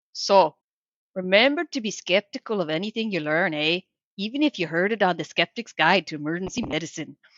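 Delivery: Minnesotan accent, read out. Asked to read the show's tagline in their best Minnesotan accent: Minnesotan accent. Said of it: "read the S G M tagline in your best Minnesotan accent".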